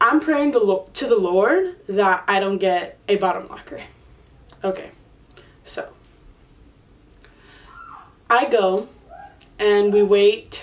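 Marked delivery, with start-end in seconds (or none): none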